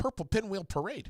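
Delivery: very fast, rapid-fire delivery. After four cups of coffee, showing off a tongue twister: very fast. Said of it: "Did you see how fast I did that?".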